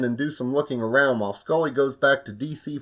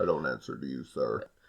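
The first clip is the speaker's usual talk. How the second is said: insanely deep, very quiet put-on voice; 13 semitones lower, 11 dB quieter than usual. Recapping a scene with Mulder, the speaker imitates a man's insanely deep voice. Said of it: "His voice is insanely deep".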